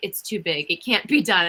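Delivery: ordinary talk, nothing marked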